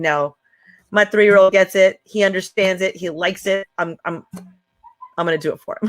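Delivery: ordinary talk, nothing marked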